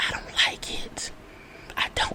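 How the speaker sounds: very quiet, hushed whisper under the breath. Speaker sharing an opinion they fear will make people mad, whispering. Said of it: "I'm whispering it because I don't want nobody to get mad at me".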